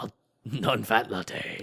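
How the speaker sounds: gruff, angry voice. Saying random words as a joke: Need for Speed driver voice. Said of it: "driver guy's voice from Need for Speed".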